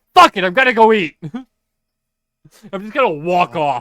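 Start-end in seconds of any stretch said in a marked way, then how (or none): 0.2-1.2 very loud, aggressive, high-pitched yell. Walking off from the others in the scene, aggressive and loud. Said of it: "aggressively and loudly go".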